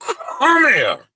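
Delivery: very high voice, forced through clenched teeth. Retelling grabbing a man who insulted him, talking through teeth. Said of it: "I'm talking through my teeth".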